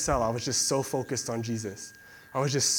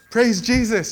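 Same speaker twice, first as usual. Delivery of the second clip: put-on super-excited rejoicing shout, very loud and high; 9 semitones higher, 8 dB louder than usual. Describing a coworker at the school library, imitating her: mock-excited exclamation. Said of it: "she's like excited".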